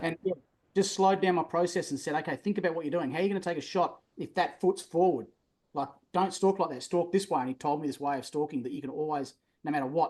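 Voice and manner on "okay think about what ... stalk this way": plain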